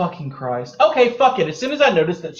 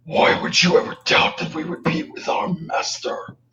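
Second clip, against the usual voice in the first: deepest possible demonic put-on voice. Speaking as a character trying to persuade her, in a demonic voice. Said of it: "in the most demonic voice that I can muster".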